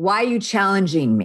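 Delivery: mock god voice, lightly suggested. Speaker retells a voice heard in their head while writing, retelling a loud booming voice. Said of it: "this loud booming voice in my head".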